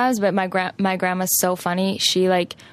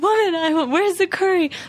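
put-on angry yell, much higher pitch; 11 semitones higher than usual. Retelling the grandpa yelling at her about her cooking, imitating an angry yell. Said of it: "so angry".

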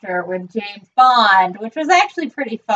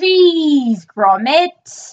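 cheese drawn out and pitched up; 5 semitones higher than usual. Discussing how the character's voice shaped his look, the speaker quotes a Wallace voice, drawn-out 'cheese'. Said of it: "drew out his enunciation of cheese".

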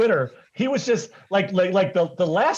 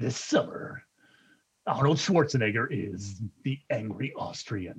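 much lower, quieter movie trailer voiceover; 8 semitones lower, 8 dB quieter than usual. Friends joke about being the preview guy; one does movie trailer voiceover. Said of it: "I always wanted to be the preview guy".

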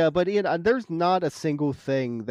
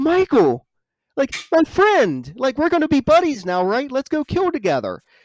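mock giddy, very high, loud, overjoyed gushing; 9 semitones higher, 7 dB louder than usual. Recapping a scene where Dr. Sartain greets Michael, imitating joyous Dr. Sartain. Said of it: "he's just, like, joyous".

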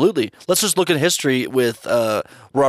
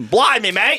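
put-on Australian accent, much higher; 10 semitones higher than usual. Joking in a group conversation, putting on an Australian accent. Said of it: "It's Australian".

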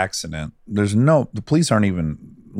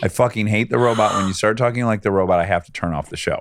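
plain

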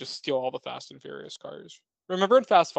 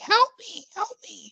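very high, fake, helpless old woman pleading; 3 dB louder than usual. Retelling a movie scene, voicing the Green Goblin faking an old woman. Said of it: "he's pretending to be an old woman".

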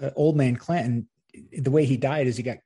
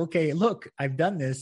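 loud yell; 3 semitones higher than usual. Retelling a stunt performer boasting about the fall: imitating someone yelling. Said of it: "that's why you were yelling".

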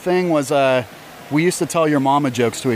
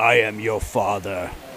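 deep, very slow villain voice, every word dragged; 6 semitones lower, 3 dB quieter than usual. Retelling how James Earl Jones turned to you at breakfast and spoke in the Darth Vader voice. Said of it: "In the Darth Vader voice".

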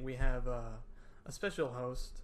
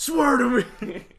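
loud, high-pitched, slow growl. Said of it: "What does Batman say?".

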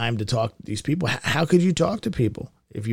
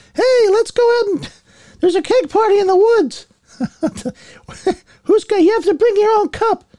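put-on very high, slightly loud little teenage voice; 9 dB louder than usual. Recalling one's teenage self, little teenage Mickey Mouse voice. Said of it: "I had this little teenage voice, like almost like Mickey Mouse".

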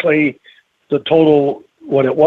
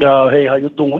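put-on thick, laid-on New York accent. Describing people sent from up north, mimicking their heavy New York accent. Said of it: "with a very heavy New York accent".

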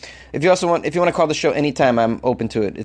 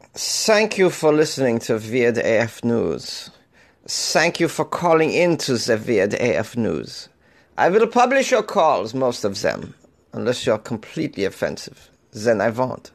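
clumsy, unconvincing, bad put-on German accent. Thanking callers and explaining which calls get published: bad German accent. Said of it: "doing a German accent that isn't very good".

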